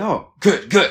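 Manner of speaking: put-on thick French accent on Portuguese. Recalling an elderly flute teacher's reaction to their first playing, imitating thick French accent. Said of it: "Like with a very thick French accent in Portuguese".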